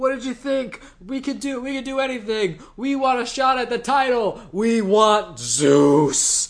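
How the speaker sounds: high, loud, cocky trash talk.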